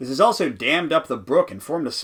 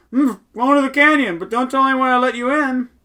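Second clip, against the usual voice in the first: loud, very high speech through a stuffed mouth; 11 semitones higher, 6 dB louder than usual. A man stuffs nougat into his mouth and speaks to the goat: mouth full. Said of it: "says with his mouth full".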